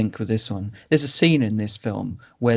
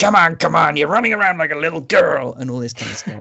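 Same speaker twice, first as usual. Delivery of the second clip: growling put-on voice, higher pitch; 6 semitones higher than usual. Describing a film character's lines, Burgess Meredith growl. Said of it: "He's just constantly growling things".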